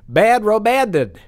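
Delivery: plain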